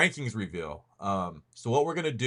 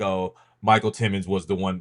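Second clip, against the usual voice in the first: normal talking voice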